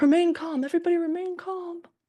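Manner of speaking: put-on very high, shrill, loud screaming. Comparing a trading moment to The Office, imitating a scream from The Office. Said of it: "Except he's screaming".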